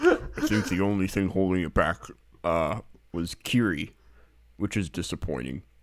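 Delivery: disguised, voice-changer-like voice. Reading a three-star review as the anonymous reviewer: disguised anonymous reviewer voice. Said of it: "also doing that voice".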